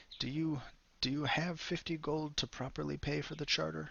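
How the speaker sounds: pained voice, wincing while speaking. Voicing a character in the scene who winces at this point, pained, wincing voice. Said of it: "winces at this point with a pained expression".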